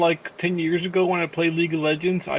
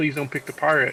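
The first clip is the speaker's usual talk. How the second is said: plain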